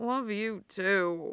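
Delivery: hoarse, croaky, sick-sounding voice. Lying in bed, Styles answers Derek as he sits down, croaking. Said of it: "Styles croaks".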